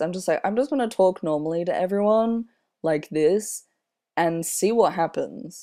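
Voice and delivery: ordinary talk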